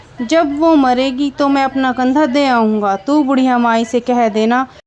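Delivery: plain reading voice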